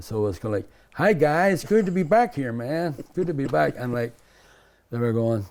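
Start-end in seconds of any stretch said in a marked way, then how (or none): 0.9-3.8 loud, high, very badly faked American accent. Recalling talking with visitors on the first day in the cell, really bad american accent. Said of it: "really worst American accent".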